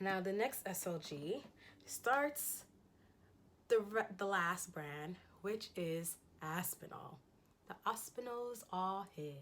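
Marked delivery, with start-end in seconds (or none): 7.7-9.3 very bad, fake put-on British accent. Introducing the brand Aspinall on the channel, bad put-on British accent. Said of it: "That's the worst and probably the only British accent you'll have me ever attempt".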